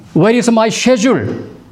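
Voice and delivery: British English pronunciation. Explaining the academy's English teachers use British pronunciation: British accent. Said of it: "그래서 영국식 발음이죠".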